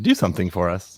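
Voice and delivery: bossy, pushy, domineering tone. A character who finds the place boring alone tells the newcomers: bossy demand. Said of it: "That seemed awfully bossy".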